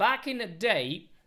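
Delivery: put-on London accent. Opening a lesson about playing with the larynx, speaking in a london accent. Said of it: "that's why I'm using the London accent".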